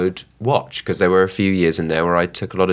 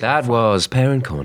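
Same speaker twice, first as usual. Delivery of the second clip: put-on radio DJ announcer voice; 4 semitones higher than usual. Child co-host signing off the Parent Corner segment; radio DJ voice. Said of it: "That was my DJ voice".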